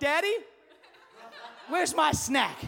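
put-on rude, demanding child voice. Retelling a child asking for a snack: imitating a child's rude tone. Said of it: "we gotta talk about your tone".

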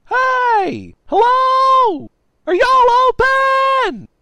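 put-on very loud, very high, shrill, drawn-out drunken scream. A drunk guy stumbles into a computer repair shop at night, drunk screaming. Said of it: "This guy was clearly too drunk to realize he had stumbled into a computer repair shop, ... Tallboy screamed".

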